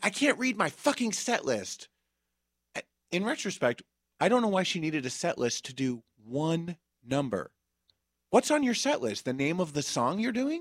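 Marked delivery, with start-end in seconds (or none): 0.0-1.9 high-pitched screaming voice. Retelling a performer screaming at the tech person: imitating someone screaming. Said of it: "she's screaming at".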